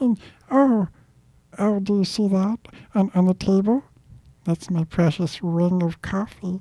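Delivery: tiny creepy creature voice, very high. Continuing the voice bit, doing a creepy Lord of the Rings voice. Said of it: "it's freaking creeping me out".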